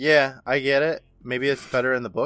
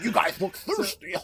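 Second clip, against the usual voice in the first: cartoon character voice, pitched up; 7 semitones higher than usual. Recapping an episode, imitating a monster who sounds like Mister Dink: Mister Dink voice. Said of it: "He sounds like Mister Dink from, from Doug".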